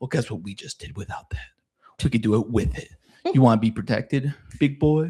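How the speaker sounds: sly, condescending, possessive sweet talk. Retelling how Venetim bargains with a commander: imitating Venetim talking like he owns him. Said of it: "talking to this commander like he owns him".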